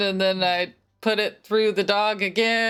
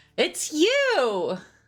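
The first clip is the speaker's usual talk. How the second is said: high, gleeful cry with "you" drawn out; 8 semitones higher than usual. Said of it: "I'm gonna cry out with glee".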